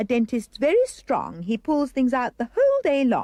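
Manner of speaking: ordinary talk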